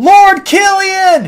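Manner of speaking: yelling really loud. Calling to someone far away in outer space: yelling really loud. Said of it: "I gotta yell really loud".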